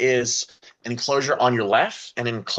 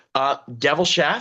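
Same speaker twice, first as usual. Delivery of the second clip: ordinary talk, nothing marked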